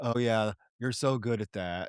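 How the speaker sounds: unconvincing, half-hearted line reading, not selling it. Imitating an actor's line from a film scene: imitating an unconvincing actor. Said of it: "the actor isn't selling it at all".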